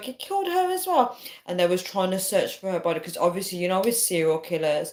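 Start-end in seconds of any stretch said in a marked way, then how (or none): 0.0-1.2 very high, panicky, alarmed cry. Retelling a scary dream about a serial killer: imitating mom panicking.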